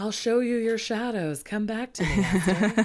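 luring, beckoning, calling voice. Voicing the moon beckoning Esther to come back: voice of the moon. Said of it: "That's what that moon sounds like".

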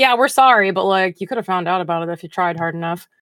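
normal talking voice

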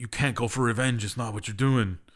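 ordinary talk

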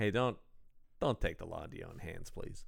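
feeble, very quiet, weak, rushed voice. Describing a scene, the speaker imitates a cop: imitating a weak cop. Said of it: "a cop just very weakly goes".

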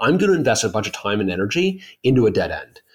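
plain

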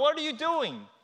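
acted-out high, shrill screaming outcry. Describing a fan's reaction to a bad call: retelling a scream at the umpire. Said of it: "you're screaming".

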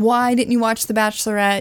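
ordinary delivery

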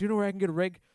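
mock frantic, worried tone, loud and panicked. Retelling what a stranger asked on the street: imitating a panicked man. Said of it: "And he started getting panicked".

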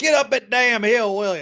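shrill yelling, pitched very high. Retelling how a dude on the show was yelled at: imitating Steve Austin yelling. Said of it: "yelling at this dude. He's like".

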